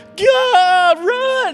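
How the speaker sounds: put-on very high, shrill, panicked, terrified shriek, God drawn out. Retelling how the fleeing army cried out: imitating men screaming in terror. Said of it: "A hundred thirty-five thousand grown men screaming".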